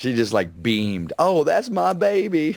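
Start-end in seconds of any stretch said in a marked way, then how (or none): 1.2-2.5 very high, slow, put-on Southern drawl. Imitating the wife beaming over a clearance gift: put-on southern accent. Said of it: "I do give you such a Southern accent".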